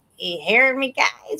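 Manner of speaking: little, small squeaky voice. Recalling a soup kitchen scene, the speaker does Scott Baio's little squeaky voice. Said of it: "the little squeaky voice".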